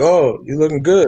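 sarcastic, facetious, teasing and clowning tone. Imitating a woman who might compliment a t-shirt: imitating a facetious compliment. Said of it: "she could be being facetious".

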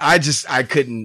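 ordinary delivery

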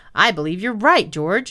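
ordinary talk

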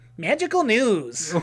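high, really nerdy voice. Redoing a line on request for the recording, in a really nerdy voice. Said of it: "Do it really nerdy voice".

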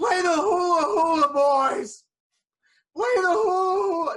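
put-on very loud, very slow, high drunken yell. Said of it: "kept yelling".

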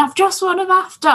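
high, triumphant, acted-out screaming. Describing a woman running laps after winning, retelling her screaming. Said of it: "She just did loads of laps screaming".

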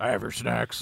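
put-on gruff actor voice. Doing an impression after announcing it: Harrison Ford impression. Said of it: "that's my impersonation of him from Shrinking".

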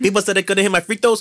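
mock Greek-accented English. Quoting a player at his post-game conference after the closeout game, in a put-on greek accent. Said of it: "he talks in his Greek accent".

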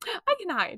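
little squeaky voice, very high. Quoting what she says, as when reading Fourth Wing: small squeaky voice. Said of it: "she's back to talking in that little, like, when I would read fourth wing for like a little squeaky voice".

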